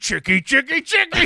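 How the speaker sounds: full pirate voice, very high, shrill and loud. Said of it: "you went full pirate".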